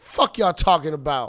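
extra-thick New York twang, laid on heavily. A speaker shows how they put hype on their thoughtful jokes: extra new york twang. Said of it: "I put an extra New York twang on it".

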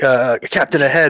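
loud shouted call. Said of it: "yell out".

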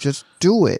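short-tempered, fed-up, angry, impatient tone. Recapping a scene where Popo loses patience with Goku: mock-angry Popo. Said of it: "Then Popo gets angry".

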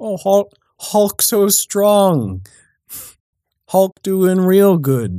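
put-on high, slow, soothing baby-talk cooing. Speaker imagines a hero talking to the hulk, in baby talk. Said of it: "use like baby talk Hulk language".

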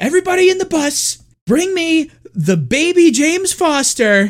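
acted, very high-pitched, unhinged scream. Retelling a scene where Mia Goth calls a man out, imitating Mia Goth screaming. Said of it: "she's screaming".

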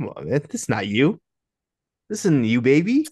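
disappointed, reproachful appeal with swooping pitch. Retelling how a wrestling commentator reacted: imitating a disappointed dad. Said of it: "sounded like such a disappointed dad".

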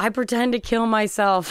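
talking through hard laughter. Retelling a man explaining his ketchup prank, imitating him laughing hard. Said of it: "He's laughing so hard".

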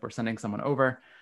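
plain

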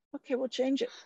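unbothered, even-tempered tone. Retelling how the other speaker answered a found mistake: imitating a calm reply. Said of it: "you very calmly went".

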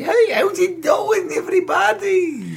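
put-on Irish accent, pitched very high. Comedian showing how he used to greet crowds at open mics, attempted Irish accent. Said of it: "And that is Irish?".

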